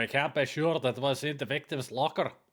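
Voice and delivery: put-on speaking with a Scottish accent. Voicing one character in an acted scene, in a Scottish accent. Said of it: "I got a different Scottish accent".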